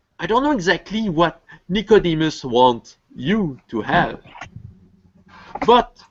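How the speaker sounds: friendly, easygoing voice. Asked what he wants, a man with a rich client makes his offer, friendly. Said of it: "Well, he's just checking upward to his crow, / friendly manner".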